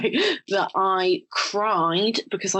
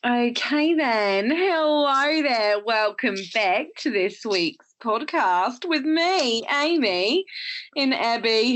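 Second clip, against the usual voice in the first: put-on, slow, drawn-out Australian accent; 4 semitones higher than usual. A podcast host welcoming listeners back to this week's show: australian accent. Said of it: "I'm speaking in Australian accent".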